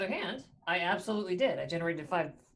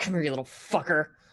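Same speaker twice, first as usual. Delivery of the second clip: raised voice forced out through clenched teeth; 5 dB louder than usual. A player voicing their character swinging at a foe again, through gritted teeth. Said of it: "it's just little like through gritted teeth".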